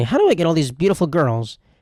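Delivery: pompous, self-satisfied, put-on wealthy tycoon voice. Mocking an idea as a rich man's invention, the speaker does a rich man's voice. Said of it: "That's my rich man's voice".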